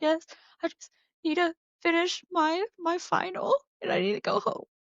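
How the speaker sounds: acted out crying, very high, tearful. Recounting answering the science kid who asked if everything was okay, retelling own tearful reply. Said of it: "I started crying again".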